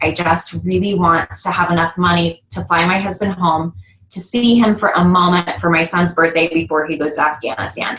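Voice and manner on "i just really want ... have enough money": plain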